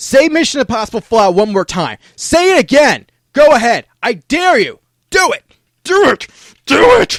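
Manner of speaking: shrill angry yell, rising. Retelling how he yelled at his TV while watching an episode; retelling angry yelling. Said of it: "I'm just yelling at my T V saying".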